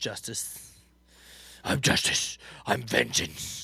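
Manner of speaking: raspy, rough, very slow. Talking about Batman games, answering a prompt: raspy Batman voice. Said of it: "I'm raspy".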